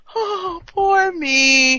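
slow, tearful mock pity. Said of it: "he says it all wistfully".

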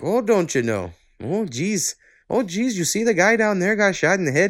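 put-on Minnesota accent, pitched very high. Describing the accents in a tv show, imitating how the characters talk: minnesota accent. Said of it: "all these fucking Minnesota accents".

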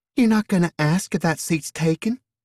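very high, innocent, sweet country falsetto drawl. Narrator reads the waif's line as the teller slides closer, in a sweet country falsetto drawl. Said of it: "Her voice was a surprising falsetto, sweet, almost innocent, and decidedly country".

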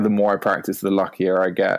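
ordinary delivery

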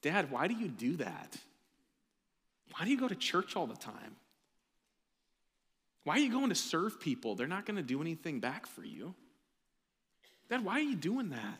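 put-on guileless, innocent, sing-song child voice. Speaker voicing a child's questions to their dad, put-on innocent child voice. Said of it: "in the innocent voice of a child saying".

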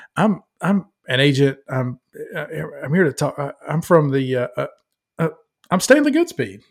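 fumbling, halting, stumbling, nervous stammering speech. Retelling a film scene where an agent walks in: imitating nervous Stanley Goodspeed. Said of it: "he's all fumble-fingered and nervous".

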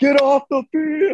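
shrill, very high, loud scream. Recounting a man shown on tv during a big play, retelling a scream. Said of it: "he's just screaming".

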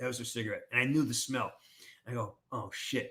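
ordinary delivery

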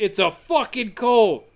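acted-out sudden outburst, half exclaimed, like a scream. Telling a story, acting out a man who gets up and screams, retelling a scream. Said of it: "gets up and screams".

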